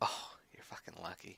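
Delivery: soft, hissed whisper under the breath.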